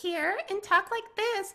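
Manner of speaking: very high voice. Showing a voice range from voice work in games: high-pitched voice. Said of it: "a voice range that can go up".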